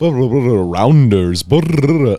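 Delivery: fake Italian gibberish. Describing a Malkovich comedy sketch, the speaker quotes it in mock Italian gibberish. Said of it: "he's speaking Italian".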